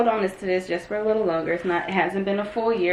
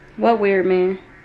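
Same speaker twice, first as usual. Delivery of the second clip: usual speaking voice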